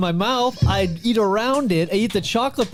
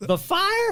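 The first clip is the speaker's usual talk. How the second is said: Southern belle voice, very high; 13 semitones higher than usual. Doing an impression of a co-host in a high-pitched voice. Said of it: "That was my impression".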